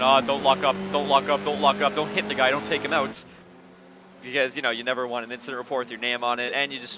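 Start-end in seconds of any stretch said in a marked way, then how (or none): none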